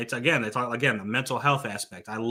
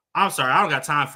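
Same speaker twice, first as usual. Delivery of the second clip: mock blunt, curt, dismissive tone; 3 semitones higher, 4 dB louder than usual. Retelling how the moderator brushed off a voice actress: imitating a blunt brush-off. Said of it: "he just said that straight up into the mic".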